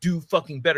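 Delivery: imitated fierce speaking. Retelling confronting a man up front: retelling a fierce telling-off. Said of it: "fiercely, I'm telling him".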